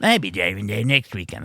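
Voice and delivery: teasing, mocking parody of a way of talking. Mocking the other speaker's way of talking: imitating the other speaker. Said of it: "That's my impression of you".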